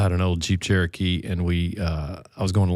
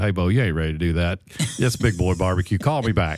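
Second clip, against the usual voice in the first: put-on drawling Eastern North Carolina accent. Retelling a barbecue cook friend's phone reply: Eastern North Carolina accent. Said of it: "in that Eastern North Carolina accent".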